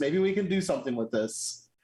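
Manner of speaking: ordinary delivery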